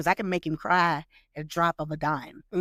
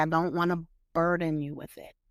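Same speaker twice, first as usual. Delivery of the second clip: plain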